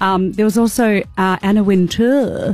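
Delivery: posh, la-di-da, very fancy put-on voice. Telling others about dropped cameos, you name anna wintour in a put-on very fancy voice. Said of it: "Why did you say it like that?".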